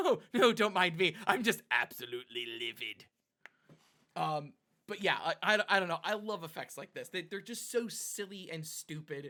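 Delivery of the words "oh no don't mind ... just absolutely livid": loud, raised anime villain voice. Discussing a card game, then quoting as Frieza: Frieza voice. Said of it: "I feel like Frieza from Dragon Ball Z Abridged".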